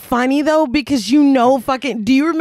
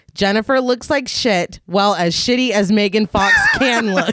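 normal talking voice

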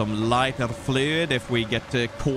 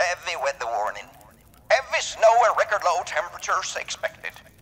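put-on old radio announcer voice, higher; 6 semitones higher than usual. Reading a weather warning note aloud: old radio host voice. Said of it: "you tried to sound like an old radio host".

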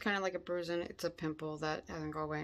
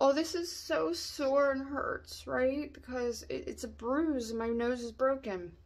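fake crying, high and slow; 6 semitones higher than usual. Speaker trying foundation over a bruise acts out her crying, mock crying. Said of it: "So let's just say me crying is like".

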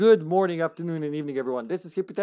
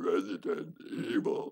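breathy whispered announcer voice calling out a title; 10 semitones lower, 8 dB quieter than usual. Trying a favourite game announcer's voice: Outbreak File Two announcer voice. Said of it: "I can't even do that voice".

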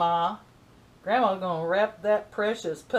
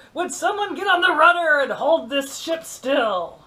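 loud, pitched-up bad put-on pirate voice; 7 semitones higher, 5 dB louder than usual. After spilling crumbs on camera, joking in a terrible pirate voice. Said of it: "I have a terrible pirate voice".

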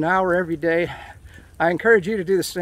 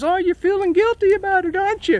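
high, teasing mock woman's voice. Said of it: "my wife, she says".

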